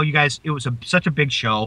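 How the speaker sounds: usual speaking voice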